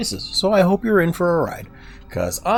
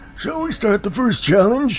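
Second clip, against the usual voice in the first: put-on old man voice, higher and slower; 8 semitones higher than usual. Voicing the character Savant, giving him an old man voice. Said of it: "I just gave him Old Man voice".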